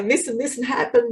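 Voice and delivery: sobbing, crying the words out through tears. Retelling explaining to her husband what she saw: retelling her own sobbing words. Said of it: "I'm sobbing and saying".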